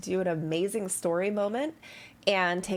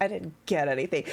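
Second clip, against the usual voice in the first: put-on sarcastic sigh; 2 semitones lower than usual. Echoing another player's sarcastic remark about their level-up: imitating a sarcastic sigh. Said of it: "I was just being sarcastic".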